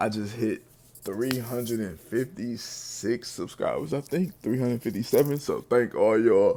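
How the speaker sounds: talking through a yawn. Thanking subscribers just after waking up, yawning while talking. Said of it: "I'm sorry I'm yawning".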